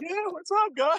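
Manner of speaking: spaced-out, stoned-sounding, very high-pitched voice. Retelling wandering around after two days straight: imitating being high. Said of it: "I was high as shit".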